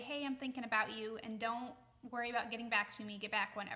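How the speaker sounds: normal talking voice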